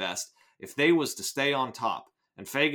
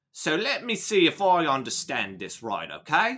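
attempted British accent, much slower; 5 semitones higher, 4 dB louder than usual. Setting expectations low, the speaker tries a line in an attempted Michael Caine British accent. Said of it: "attempting the British accent here".

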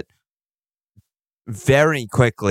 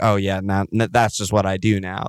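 ordinary delivery

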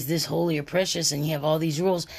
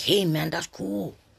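slow, put-on wannabe streetwise persona voice. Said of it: "They start talking like".

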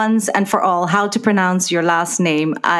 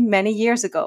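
ordinary talk

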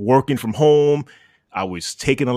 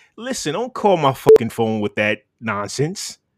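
ordinary delivery

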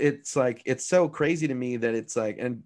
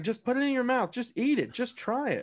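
very high, shrill, pushy, insistent yelling; 11 semitones higher than usual. Retelling being chased around the house, the speaker acts out the chaser's yelling. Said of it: "just yelling".

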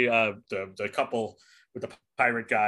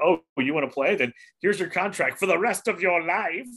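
put-on wicked, evil demon voice, pitched up; 6 semitones higher than usual. Explaining old studio contracts, voicing the studios, in an evil demon voice. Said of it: "Just using evil demon voice there".

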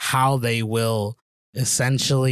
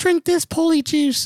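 very high, storybook heroine voice, fantasy-film style; 4 dB louder than usual. Acting out a line in a joke scene: Hermione Granger voice. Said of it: "it sounded like freaking Hermione Granger".

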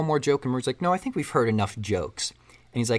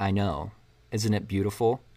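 put-on cold character voice, slower; 4 semitones lower than usual. Retelling a scene where Joker answers the police officers, imitating the Joker's most cold voice. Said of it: "in just the most cold voice".

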